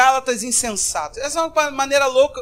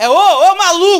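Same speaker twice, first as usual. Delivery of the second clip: aggressive scolding yell, loud and high; 5 semitones higher, 7 dB louder than usual. Explaining how the text should really be read, acting out a shout. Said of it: "O negócio está num nível de grito".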